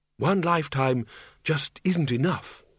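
ordinary delivery

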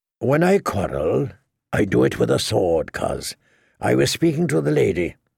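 usual speaking voice

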